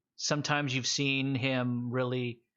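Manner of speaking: ordinary delivery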